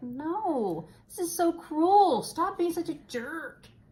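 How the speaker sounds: play-acted very high, dragged-out, upset protesting voice. Retelling reacting to a dog and girl separated: retelling own upset protest. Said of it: "when I was getting all upset".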